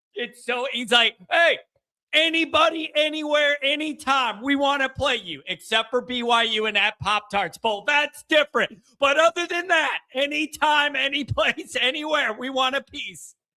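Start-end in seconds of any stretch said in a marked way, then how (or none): 1.3-13.4 acted, brash, high-pitched hollering. Imitating Luis yelling at work: imitating Luis yelling. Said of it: "he just starts yelling".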